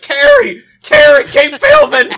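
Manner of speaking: high, loud yelling. Recounting a video where a woman yells at her husband, imitating a woman yelling. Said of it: "she's like yelling at her husband".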